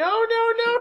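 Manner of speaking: put-on full panic freakout, very high-pitched, shrill and loud. Retelling the listener's reaction to calling it RPG Gamer, imitating a panic attack. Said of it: "Panic attack".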